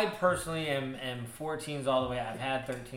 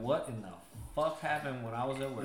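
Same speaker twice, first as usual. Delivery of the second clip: ordinary talk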